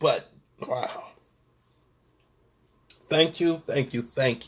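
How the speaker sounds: soft voice on the edge of crying, holding back tears. Speaker thanking Jacqueline for her powerful words, holding back tears. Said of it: "I'm trying not to cry right now".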